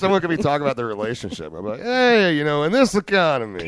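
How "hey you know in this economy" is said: deliberately bad, loud, drawn-out line reading. Showing how to answer someone's relationship talk: saying it in the worst way. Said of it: "say it in the worst".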